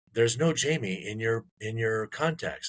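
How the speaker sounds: ordinary talk, nothing marked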